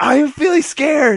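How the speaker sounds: very high, very loud, shrill yell. Showing how the yelling rule works at the movies: yelling very loudly. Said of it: "I have to yell out".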